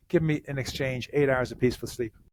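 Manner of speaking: plain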